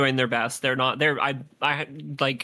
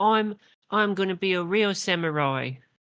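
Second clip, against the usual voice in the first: put-on slow, high-pitched New Zealand child accent; 6 semitones higher than usual. Retelling a scene with child actors from New Zealand, Antonio impression, New Zealand accent. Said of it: "in a fucking New Zealand accent".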